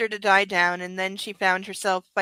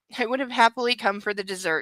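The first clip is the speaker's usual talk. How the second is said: ordinary delivery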